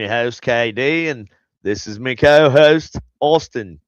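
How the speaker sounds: bad put-on Australian accent, sounds Irish. Opening the show, host introduces the hosts in a bad Australian accent. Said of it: "Irish? Is that what that is?".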